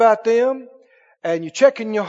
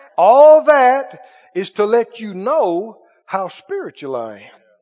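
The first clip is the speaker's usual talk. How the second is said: very slow, deliberate delivery, each word laid out; 4 dB louder than usual. Saying the point again to the listener, said real slow. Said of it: "Let me say that again real slow".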